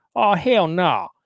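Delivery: put-on Deep South American accent. Quoting a man looking over the speaker's ASVAB scores and job selections: thick Deep South accent. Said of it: "thickest Deep South accent".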